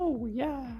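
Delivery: very high-pitched fairy-tale cartoon character voice. Saying a catchphrase to the other speakers: Gingerbread Man voice from Shrek. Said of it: "You sound like the gingerbread from, is it Shrek?".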